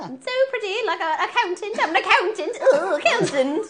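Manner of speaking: very high, loud, dainty, prim British princess voice. Imitating how another player used to sound: mocking pretty British accent. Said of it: "That's what you sounded like".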